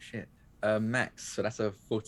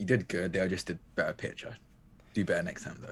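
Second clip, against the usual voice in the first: put-on muttered remark, lower pitch; 3 semitones lower, 3 dB quieter than usual. Voicing a teammate who doesn't look at Lee: Ravi muttering under his breath. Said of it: "if we're under his breath".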